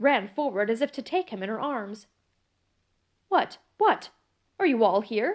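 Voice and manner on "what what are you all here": peevish, irritable tone. Reading the lawyer's line to the huddled servants: peevish. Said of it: "said the lawyer peevishly".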